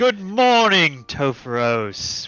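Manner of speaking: big resounding voice. Vesrin greets Topher as he finally comes down, in her most booming voice. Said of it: "in like her most booming voice".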